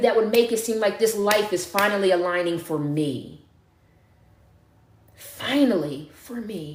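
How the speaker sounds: close to crying, on the verge of tears. Speaking to listeners about what is on its way, on the verge of tears. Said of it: "And I'm about to cry".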